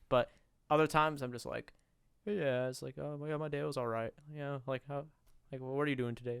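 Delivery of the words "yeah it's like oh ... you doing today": quiet, soft-spoken, casual chatter. Contrasting podcast mode with other times, acting out own everyday talk, imitating own soft-spoken self. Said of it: "very soft spoken".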